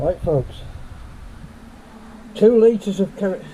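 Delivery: loud and muffled, as if through a face mask. Addressing viewers while cleaning out a tank, muffled through a mask. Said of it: "I'm talking to you through my mask".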